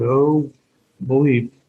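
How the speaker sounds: ordinary delivery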